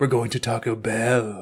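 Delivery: upward inflection that lifts the line. Quoting a remembered movie line: Raymond Cocteau voice, upper inflection. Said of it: "upper inflection like that".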